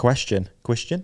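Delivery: put-on New Zealand accent. Repeating the word question as a joke: New Zealand accent. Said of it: "That's my, uh, New Zealand accent".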